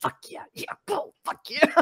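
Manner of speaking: eager, excited cheering whispered under the breath. Retelling a movie scene of a father watching a game beside his sleeping son, acting out a whisper.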